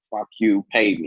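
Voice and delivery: ordinary delivery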